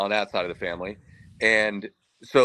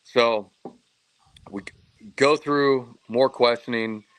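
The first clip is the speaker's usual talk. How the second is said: usual speaking voice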